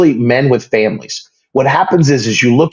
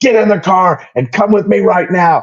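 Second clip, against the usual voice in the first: mock frantic yelling, much higher and slower; 6 semitones higher than usual. Retelling how someone came back yelling to get in the car, imitating frantic yelling. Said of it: "he is flipping out".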